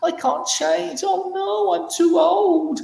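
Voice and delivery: very high, very slow, creaky, drawn-out silly voice. Speaker voicing a limiting inner belief: ridiculous put-on voice. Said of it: "I do this voice because I'm trying to make it sound ridiculous".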